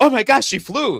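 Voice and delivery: put-on surprised, astonished tone. Retelling pretending to see a movie scene for the first time: retelling faked surprise. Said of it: "I had to pretend like I had saw it for the first time".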